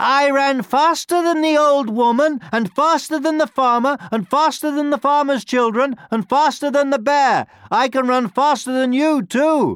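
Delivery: very high, full-lung bellowing voice. The gingerbread man walks up to the fox's nose and boasts, bellowing in his loudest voice. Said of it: "bellowed in his loudest voice".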